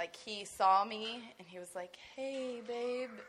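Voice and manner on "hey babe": very slow, pitched-up, drawn-out words. Retelling what a nearly unresponsive man in the er said on seeing her, imitating very slow speech. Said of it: "really, really slow".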